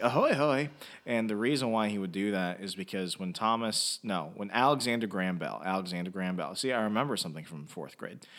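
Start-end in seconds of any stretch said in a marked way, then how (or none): 0.0-0.7 loud, high-pitched cartoon voice. Retelling how a cartoon character answered the phone: Mister Burns voice. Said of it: "So Mister Burns from The Simpsons, ... he would say something like".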